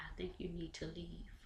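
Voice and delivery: hushed, very quiet, low voice. Retelling what a woman said to a man she could barely keep from hitting: quiet voice. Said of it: "Tina said in a quiet voice".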